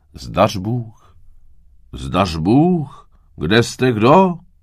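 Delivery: calling out. A wanderer looks around for whoever is at the cottage, calling out.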